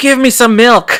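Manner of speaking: mock-panicked, frantic. Telling a story, acting out a panicking man ordering at a convenience store: imitating a panicked demand. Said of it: "He's freaking out".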